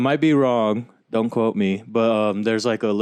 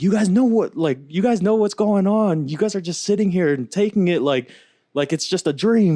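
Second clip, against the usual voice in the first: mock fed-up yelling, very high pitched; 9 semitones higher than usual. Retelling a passenger yelling at the other passengers: imitating a man yelling. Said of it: "yelling at the passengers".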